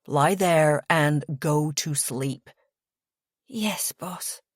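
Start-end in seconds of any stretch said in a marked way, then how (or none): 3.5-4.3 soft, drowsy, half-asleep mumbling. Reading a story aloud, a drunk character agrees to go to sleep: sleepy mumble. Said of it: "I mumble sleepily".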